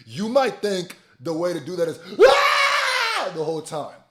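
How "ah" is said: very loud, very high, stretched-out ah. Speaker showing how people think confronting someone should sound, with a loud yell. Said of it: "the louder you are".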